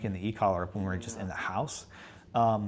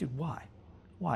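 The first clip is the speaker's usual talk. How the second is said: sad, disappointed, let-down tone; 6 semitones higher, 7 dB quieter than usual. Demonstrating a change of tone toward someone in trouble, disappointed tone. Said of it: "I can even change my tone into like a disappointed tone".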